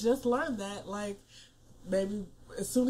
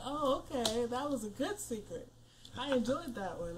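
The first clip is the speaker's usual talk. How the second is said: ordinary talk, nothing marked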